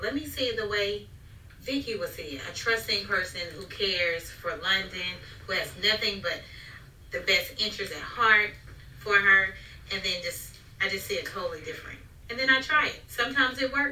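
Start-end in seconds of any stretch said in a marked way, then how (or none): none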